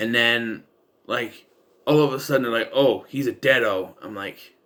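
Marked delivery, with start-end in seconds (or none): none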